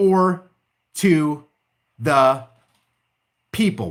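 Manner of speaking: slow, low, drawn-out, deliberate reading-aloud voice. Reading a passage of the Constitution aloud to listeners, reading slowly. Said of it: "Why did I read that slow?".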